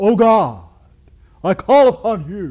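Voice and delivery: very loud, high pious prayer voice. Showing the put-on prayer voice some pastors use, in a stained-glass voice. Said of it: "the stained glass voice".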